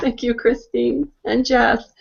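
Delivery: tearful, choked up, still crying. Speaker thanking the two previous speakers, still crying, teary. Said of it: "I'm still crying".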